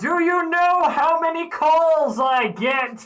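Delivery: very high, very loud, slow, shrill, drawn-out heavenly voice. Joking about a god answering a cleric's prayer: ephemeral voice from above. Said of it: "the ephemeral voice from a-, above that's like".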